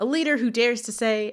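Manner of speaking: plain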